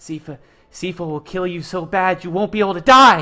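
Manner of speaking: very loud, panicked, frantic gurgling voice. Narrating what he says so only Aldrich can hear, imitating panicked gurgling speech. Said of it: "He has like a lot of panic in his voice".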